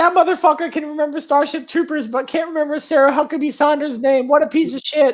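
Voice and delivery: high-pitched mocking put-on voice. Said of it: "Debbie's gonna be like".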